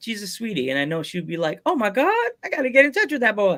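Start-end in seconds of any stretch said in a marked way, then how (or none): 1.7-3.6 high-pitched TV commercial lady voice. Imitating how a wrestler would react, voice like the Popeyes commercial lady. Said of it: "I made her sound like the lady from the Popeyes commercial".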